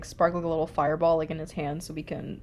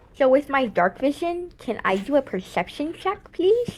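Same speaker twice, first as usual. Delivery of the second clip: silly, raised, high put-on voice; 9 semitones higher, 6 dB louder than usual. Asking the game master for a perception check: put-on metagaming voice. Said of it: "Is that your metagaming voice?".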